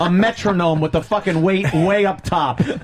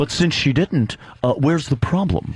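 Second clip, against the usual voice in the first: put-on mocking man's voice, lower; 3 semitones lower than usual. Imitating Gene asking Anthony why he is upset: imitating Gene's voice. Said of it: "He's got his fucking voice down".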